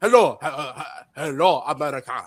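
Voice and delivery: put-on halting broken English. Describing boot camp recruits who barely speak English, halting broken English. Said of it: "they're like".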